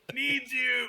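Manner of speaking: gasping voice of a dying ant. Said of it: "gasping its last breath".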